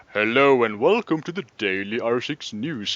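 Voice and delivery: really deep, very low voice. Opening the Daily R six News with a really deep voice. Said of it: "I still have a really deep voice".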